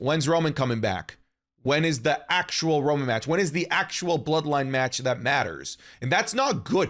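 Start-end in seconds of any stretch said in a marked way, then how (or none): none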